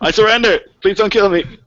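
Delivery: begging, rising tone. The speaker voices a nearly dead man who drops his weapon; surrendering man begging. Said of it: "He's like".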